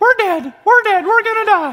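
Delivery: put-on very high, frightened six-year-old girl voice. Retelling a terrifying night, voicing his inner girl, inner girl voice. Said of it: "Same inner girl voice".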